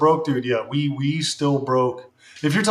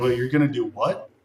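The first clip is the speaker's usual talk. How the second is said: mock hesitant, tentative tone; 2 semitones lower than usual. Retelling mom's reaction to streaming plans: imitating mom's tentative tone. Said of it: "she's a lot more tentative".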